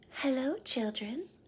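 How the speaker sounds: sugary-sweet, high voice. Reading a children's story aloud, someone greets the class in a sweet voice. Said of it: "someone said in a sweet voice".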